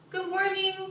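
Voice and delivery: very high-pitched voice. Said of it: "It's like that".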